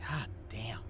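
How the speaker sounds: muttered quietly under the breath. Voicing a guard who curses under his breath: muttered under his breath. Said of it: "he goes under his breath".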